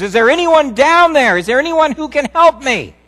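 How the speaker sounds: frantic, desperate scream at very high pitch. Telling a joke about a hiker hanging from a cliff, retelling a desperate scream. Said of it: "he screams".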